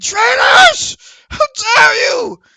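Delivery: startled scream, very shrill, very high and loud. Voicing a character just hit by a sword: screaming.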